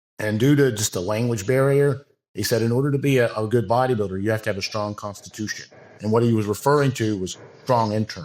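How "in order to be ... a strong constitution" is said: ordinary talk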